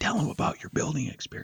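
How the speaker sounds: hushed whisper, said aside. Retelling what a colleague said during a speakerphone meeting: imitating someone whispering. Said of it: "Al whispers to me".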